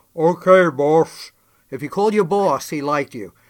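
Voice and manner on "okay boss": loud, raised, friendly buddy-like voice. Showing how he greeted people he liked: Andre impression. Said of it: "let me do my Andre".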